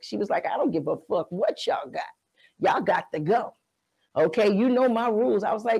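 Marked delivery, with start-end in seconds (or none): 0.5-5.4 put-on stern, strict, no-nonsense scolding tone. Retelling being told to leave at four in the morning: imitating a stern mother. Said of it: "My mother is so stern".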